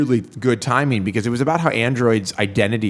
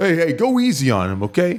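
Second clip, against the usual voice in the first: put-on Brooklyn accent, pitched higher; 6 semitones higher than usual. Speaker sticking up for someone the others are criticizing: Brooklyn accent. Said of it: "in that like Brooklyn accent".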